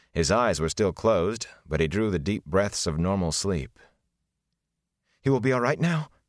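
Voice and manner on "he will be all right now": worried, anxious, pitched-up delivery. Rand asks about a sleeping man's recovery, anxious. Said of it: "Rand asked anxiously".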